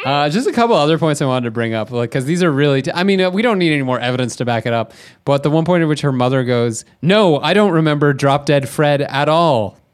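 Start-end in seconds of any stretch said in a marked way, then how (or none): 7.0-9.7 slow, mock, clearly sarcastic, dismissive tone. Retelling a line by a mother in a film: imitating a sarcastic mother. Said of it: "Clearly sarcastic".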